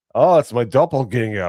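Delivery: put-on loud, high-pitched Scottish accent. Retelling what his lookalike said when they met at the meetup, imitating The Drinker's Scottish accent. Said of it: "Scottish accent".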